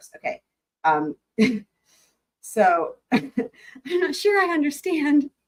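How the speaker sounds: stifled laughter mid-sentence, swooping pitch. Judge resuming after a sidebar, inviting counsel to approach: holding back laughter. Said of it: "I'm trying not to laugh out loud".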